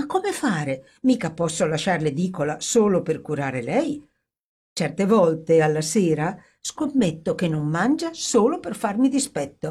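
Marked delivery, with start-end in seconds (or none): none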